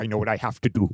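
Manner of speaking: brooding movie villain voice with weight. Prompted to do the voice while discussing the Han Solo scene, Adam Driver impression. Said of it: "do the voice".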